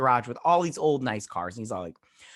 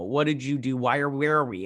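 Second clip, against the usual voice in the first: usual speaking voice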